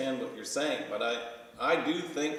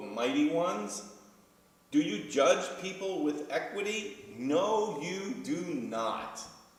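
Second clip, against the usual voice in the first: heavy, high-pitched, dripping sarcasm; 5 semitones higher than usual. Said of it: "there's this dripping sarcasm".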